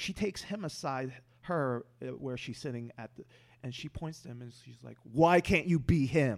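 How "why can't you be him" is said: very loud, slow, drawn-out screaming. Retelling what a teacher said after class: imitating someone screaming. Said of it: "practically screaming at me".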